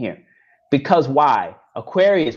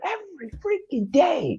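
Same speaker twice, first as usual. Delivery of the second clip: put-on man's yelling, pitched higher; 12 semitones higher, 5 dB quieter than usual. Retelling a man arguing outside with a neighbor: imitating a man yelling. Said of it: "yelling at this guy who's always outside".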